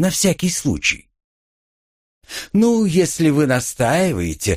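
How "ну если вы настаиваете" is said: teasing, scornful, derisive mocking tone. A woman answers the narrator's insistence, mocking. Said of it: "насмешливо улыбнулась Литана".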